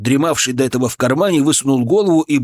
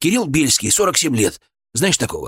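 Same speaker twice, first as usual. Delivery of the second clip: plain reading voice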